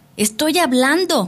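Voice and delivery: outright, high-pitched yell. Úrsula answers those who say she has died, shouting. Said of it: "gritó Úrsula".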